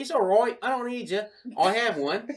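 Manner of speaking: put-on English accent. Retelling answering a spam call while pretending to be english: fake english accent. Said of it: "trying to be, like, an English guy".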